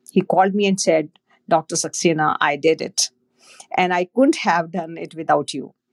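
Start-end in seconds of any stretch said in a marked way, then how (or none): none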